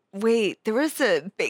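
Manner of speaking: plain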